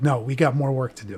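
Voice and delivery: ordinary talk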